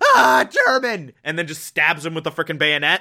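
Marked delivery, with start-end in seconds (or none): 0.0-1.1 high, panicked, groggy, startled half-asleep cry. Retelling how a man woken to take watch reacts: mock panicked, half-asleep cry. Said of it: "in his panicked, half-asleep stupor".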